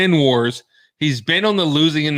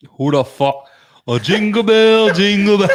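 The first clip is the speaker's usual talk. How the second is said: attempted Irish accent, pitched up high; 6 semitones higher, 4 dB louder than usual. Asked to try an Irish accent, the speaker attempts a Conor McGregor Irish accent. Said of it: "Irish accent. Please try".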